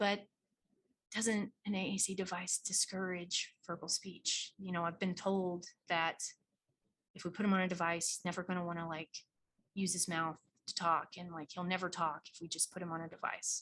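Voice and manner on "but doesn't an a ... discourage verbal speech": hushed tone, slower. Acting out how someone asks you a question, hushed tone. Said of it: "is going to ask you in a very hushed tone".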